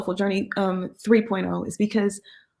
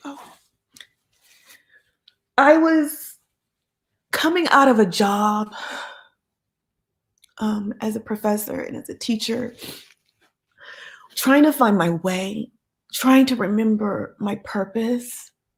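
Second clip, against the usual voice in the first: emotional, choked up, near tears. Speaker telling supporters how her project began, emotional, near tears. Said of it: "I don't mean to get emotional".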